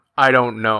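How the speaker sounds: put-on exasperated, had-enough, worn-thin tone. Retelling how he answered a kid who kept asking him questions, mock-exasperated reply. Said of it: "says in sort of an exasperated tone".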